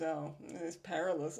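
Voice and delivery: snotty, bratty, sarcastic tone. Retelling Mark's reply to another character, Mark's sarcastic, bratty delivery. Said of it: "he's just so sarcastic and and bratty".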